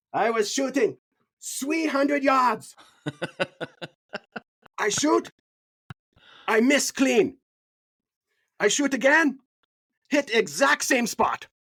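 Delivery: very high, teasing, put-on caricature voice. Recalling how they used to do impressions of Thomas, imitating Thomas. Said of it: "we'd do impressions of him".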